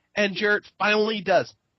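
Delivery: ordinary delivery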